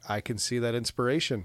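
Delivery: normal talking voice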